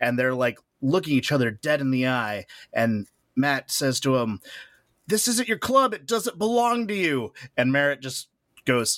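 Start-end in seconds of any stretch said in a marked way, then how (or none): 5.1-7.3 play-acted screaming, high-pitched and right up close. Retelling an argument where one man screams at another, imitating someone screaming. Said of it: "as he's screaming at him".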